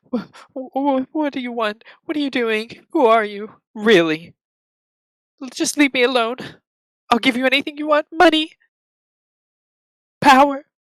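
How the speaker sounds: very high, flustered, startled stammering. Voicing Lady Vale as a man slumps into her carriage, stammering a bit. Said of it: "sort of stammers a bit".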